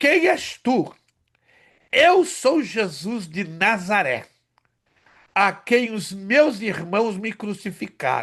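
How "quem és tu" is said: high-pitched, loud shouting cry. Retelling how the imam shouted in arabic, retelling a shout. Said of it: "E ele gritava em árabe".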